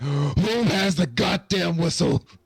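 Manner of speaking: very high, shrill yelling. Voicing a character who hears a loud whistle blowing, yelling. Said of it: "Gamesh kind of yells".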